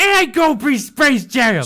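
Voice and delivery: very slow, loud, drawn-out, fully indignant protest. Imagining a game show host reacting to a bad answer: indignant Steve Harvey impression. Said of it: "get all indignant".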